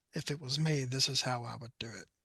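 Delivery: put-on very quiet, murmured speaking. Retelling advice a shooter gave from behind at a match: imitating someone speaking very quietly. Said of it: "very quietly, but I c-, only I could hear".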